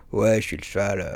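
put-on deep, rough, gravelly, dim-witted teen horse voice. Speaker demonstrates the voice an actress uses for a horse, deep gravelly horse voice. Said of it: "Elle prend une voix grave, un peu comme ça".

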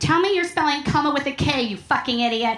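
sudden, sharp, snapping delivery. [name] answers Chris, who has just come out of hiding, snapping. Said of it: "[name] snaps".

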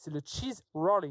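put-on royal English accent. Proposing an unlikely sport in a french conversation, royal english accent. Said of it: "mon accent anglais est vraiment royal".

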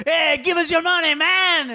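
put-on Mexican accent, very high-pitched and slow. Retelling what two guys demanding money said, in a Mexican accent. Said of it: "That totally sounds Mexican".

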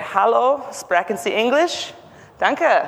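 bad put-on German accent. Showing how you'd make the calls yourself, with a terrible German accent. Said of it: "this person clearly has a terrible German accent".

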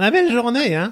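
put-on high grandmother voice. Repeating a phrase the speaker had used, in a grandmother voice. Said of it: "que j'avais mis avec un ton de grand-mère".

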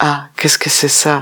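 ordinary talk, nothing marked

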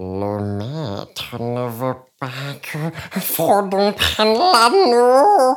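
creature voice, high and swooping. A speaker asks the audience to recognize a voice, Gollum voice. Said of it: "Est-ce que vous avez reconnu cette voix? C'était Gollum".

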